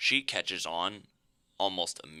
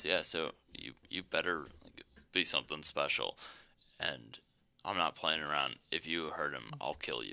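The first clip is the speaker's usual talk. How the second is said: put-on deadpan, lower and quieter; 3 semitones lower, 5 dB quieter than usual. Retelling how the coach warned a woman, imitating a deadpan threat. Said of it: "he just deadpans and then leaves the room".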